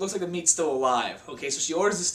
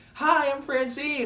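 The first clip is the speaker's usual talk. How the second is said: put-on sweet, innocent old lady voice, pitched up; 8 semitones higher than usual. Retelling an old lady entering the restaurant: imitating a sweet innocent old lady. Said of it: "she looks like this sweet, innocent lady".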